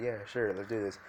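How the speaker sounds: plain reading voice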